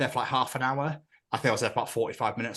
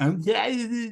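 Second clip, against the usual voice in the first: acted very high, slurred, garbled, barely formed words; 9 semitones higher than usual. Retelling a reply after dental surgery left bone in the tongue: imitating being barely able to speak. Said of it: "That's literally what I sounded like".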